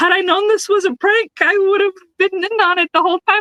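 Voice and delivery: mock indignation, high-pitched and gleeful.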